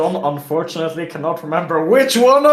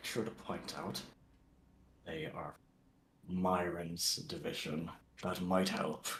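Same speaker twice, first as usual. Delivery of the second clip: hushed, very quiet whisper; 13 semitones lower, 23 dB quieter than usual. Speaking in character to companions while walking: whispering. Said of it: "I'm gonna whisper".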